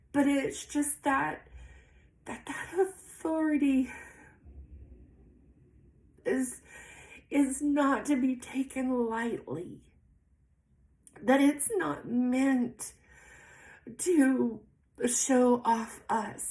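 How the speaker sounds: crying through the words. Speaker apologizes mid-talk and keeps going, crying while talking. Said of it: "I don't even know why I'm crying".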